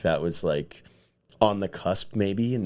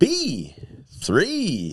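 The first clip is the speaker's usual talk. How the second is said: very high, swooping, enunciated radio announcer voice; 9 semitones higher than usual. Explaining that they always talk that way, the speaker demos a radio host voice. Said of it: "I always talk kind of like a radio host".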